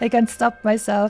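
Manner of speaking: normal talking voice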